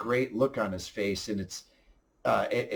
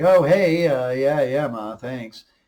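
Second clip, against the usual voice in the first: mock offhand, faintly sarcastic, loud, drawn-out nonchalance; 3 semitones higher, 8 dB louder than usual. Recapping how a character deflects praise, imitating a nonchalant tone. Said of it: "in such a great nonchalant sort of way".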